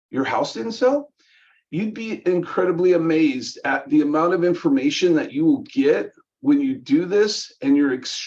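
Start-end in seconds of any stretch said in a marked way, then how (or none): 0.1-1.1 questioning tone climbing on the word sell. Repeating news back in a questioning manner: rising questioning tone on sell. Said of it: "I love to repeat it in a questioning manner. Tonality is everything on this".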